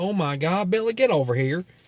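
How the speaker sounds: put-on southern American accent. Retelling what he said to Billy while playing Halo, in a southern accent. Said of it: "just with a with a southern accent".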